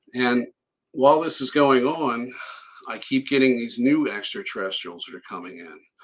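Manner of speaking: plain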